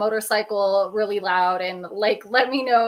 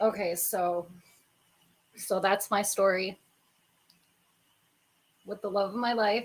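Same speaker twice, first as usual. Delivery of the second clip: holding back tears, quieter; 8 dB quieter than usual. Wrapping up a personal story for a watching audience, holding back tears. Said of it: "I'm like trying not to cry right now".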